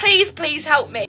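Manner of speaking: put-on tearful, crying, begging tone. Acting out the listener praying to Santa Claus at night, mock tearful pleading. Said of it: "you're crying, you're pleading".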